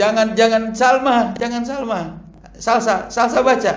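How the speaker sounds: sharp, high-pitched call.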